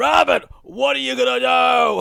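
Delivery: high, loud puppet monster voice shout. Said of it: "sounds like a combination of Cookie Monster and Yoda".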